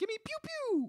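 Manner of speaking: high, mock laser-gun pew pew noise.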